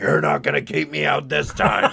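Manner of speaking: put-on loud, rough, boozy drunk voice. Voicing a drunk Finley heading back toward the museum: imitating a drunk Finley. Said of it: "That's how she sounds when she's drunk".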